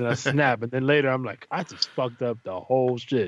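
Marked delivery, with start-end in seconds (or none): none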